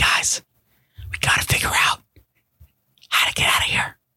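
acted-out whisper. Recapping a film, acting out the characters huddled close together: acted-out whisper. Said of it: "I'll stop doing that because I'll be crazy".

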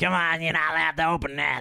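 put-on nasally child voice. Talking about the elves in a movie, acting out one of them, nasal kid voice. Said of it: "I'm sounding more like the other kid that nasally got".

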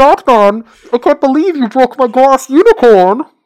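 very loud, high-pitched, goofy put-on voice. Joking about batman, the speaker addresses him in a funny put-on voice. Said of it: "he became a funny voice man".

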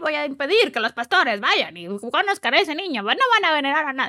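high-pitched, swooping, cartoonish devil villain voice. Retelling playing the devil in a pastorela, cartoon devil voice. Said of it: "Así, voz de caricatura".

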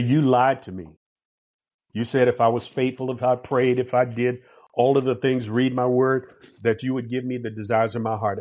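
ordinary talk

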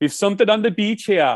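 put-on Welsh accent. Chatting with another speaker about the Welsh, slipping into a Welsh accent. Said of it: "Is that a Welsh accent?".

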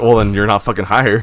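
normal talking voice

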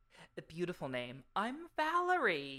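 put-on slow, posh, haughty, snooty upper-class accent. Reading a character's greeting aloud from a story: snooty upper class accent. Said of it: "such a snooty upper class accent".

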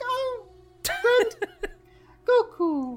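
super high-pitched, odd, impish voice. Imitating the Japanese dub of Grand Kai, super high and odd. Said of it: "It's super high and odd and like a happy".

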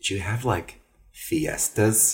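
put-on airheaded, ditzy Midwestern accent. Retelling what a woman asked the speaker in bed, in a ditzy Midwestern accent. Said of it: "in a very Midwestern kind of ditzy accent".

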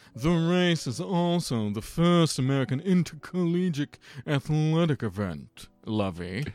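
put-on mid-Atlantic accent, high and slow. Speaker decides to say the rest of his sentence in a mid-Atlantic accent. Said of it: "Let me try to say the last of this in a mid-Atlantic accent".

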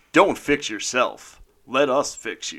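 on-air radio station announcer voice. Asked by the co-hosts, a show host delivers the show's opening line; radio announcer voice. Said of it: "Give us your best radio voice".

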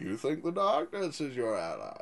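deep, swinging villain voice. Doing a go-to impression after it is named: Bane voice. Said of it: "Nolan's Bane".

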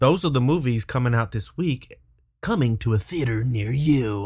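creepy movie-trailer announcer voice. Wrapping up the list of this week's new movies: creepy movie-trailer read. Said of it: "a little bit more creepy than, like, an entertainment trailer read".

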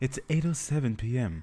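put-on seductive voice. Speakers joke that the voice assistant sounds seductive: mock-seductive Siri impression. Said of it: "that kind of sounded sexy too".

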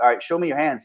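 ordinary talk

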